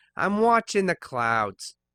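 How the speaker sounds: put-on very loud voice with a slight New York accent. Voicing a female character with ties to the mafia, slight New York accent. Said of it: "let's give her a bit of a New York accent".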